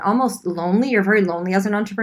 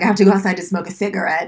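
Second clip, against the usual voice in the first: put-on casual, offhand delivery in a French accent. Retelling a friend's words at a restaurant: imitating Caroline's Frenchness. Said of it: "in all her Frenchness".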